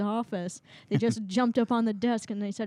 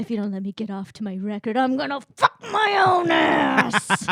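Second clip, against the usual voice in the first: put-on comic fury, loud and rising; 6 dB louder than usual. Joking with another speaker, saying a crude line: mock angry. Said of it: "it's funny to say that angry".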